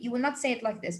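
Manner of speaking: ordinary delivery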